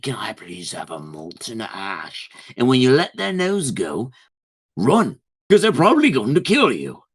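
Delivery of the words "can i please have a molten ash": very quiet, gentle, nice, polite half-whisper. Proposing to grab a fire giant's nose and ask it something, half-whispering nicely. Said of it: "whisper in their ear nicely".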